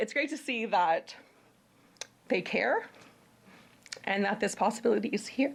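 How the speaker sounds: halting voice breaking mid-phrase with emotion. Speaker talks about businesses that care, getting emotional. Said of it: "I'm getting emotional".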